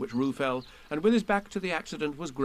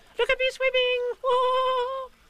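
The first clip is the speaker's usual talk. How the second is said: very high, slow, squeaked cry; 4 dB louder than usual. Narrator reading Roo calling out from the middle of his pool: squeaky Roo voice. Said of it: "Squeaked Roo".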